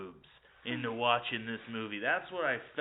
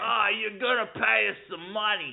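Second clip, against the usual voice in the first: put-on sleazy New York lawyer voice, higher and louder; 10 semitones higher, 7 dB louder than usual. Playing an imagined lawyer demanding money: put-on sleazy New York lawyer voice. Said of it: "trying to sound sleazy from New York".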